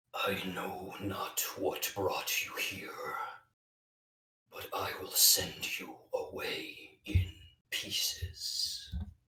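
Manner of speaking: hollow, empty, ghostly voice. A game master voices a figure calling to the players from the darkness, hollow voice. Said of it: "a hollow voice call from the darkness".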